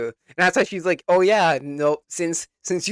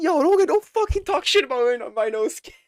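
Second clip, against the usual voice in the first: acted, furious, worked-up angry outburst; 9 semitones higher than usual. Retelling a scene where a character got mad at others: imitating an angry character. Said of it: "the guy got so fucking mad at them".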